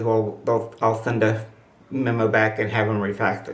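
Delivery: ordinary talk, nothing marked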